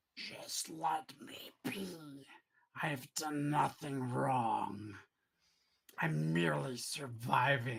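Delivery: deep, low, slow, gurgling monster voice. A creature with a toothy mouth down its torso answers the group, in a low, gurgling tone. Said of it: "In a low, gurgling tone".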